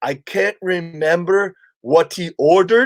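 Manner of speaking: put-on thick, laid-on Caribbean accent. Retelling what a waiter said to him at the theater, in a thick Caribbean accent. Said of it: "this thick Caribbean accent".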